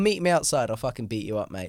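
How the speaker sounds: playful, jokey, menacing tough-guy tone. Retelling a look from Tommy Flanagan, in a funny way: mock threatening as Tommy Flanagan. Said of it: "like, a funny way".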